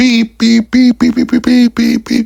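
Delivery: aggressive, very high, loud horn-like honking. Retelling a driver honking at a delivery worker: imitating aggressive honking. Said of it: "almost aggressively".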